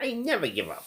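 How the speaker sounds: put-on New York accent, very high and squeaky. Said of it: "like a [name] accent".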